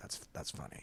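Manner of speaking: put-on near-whispered, hushed, unamused deadpan delivery. Imitating how comedians react to a joke without laughing: imitating an unlaughing comedian. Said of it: "And they kinda say it like".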